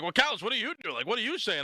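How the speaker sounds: high, defensive, pushing-back tone. Retelling Austin's reply to the speaker, imitating Austin getting defensive. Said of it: "he was getting all defensive".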